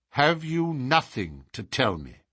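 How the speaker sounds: plain reading voice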